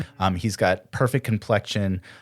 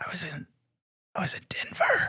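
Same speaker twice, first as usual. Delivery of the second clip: rough, breathy, really raspy, hushed voice; 11 semitones higher, 7 dB quieter than usual. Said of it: "His his voice is like really raspy".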